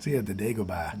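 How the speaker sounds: put-on mock Boston accent. Friends riff on saying Dagobah; one tries the line in a Boston accent. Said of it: "if you say it with a Boston accent".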